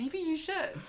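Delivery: mock sweet sunshine voice, very high-pitched. Imitating how a friend would answer a joke about dying: imitating Freddie saying it with a smile. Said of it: "with a smile".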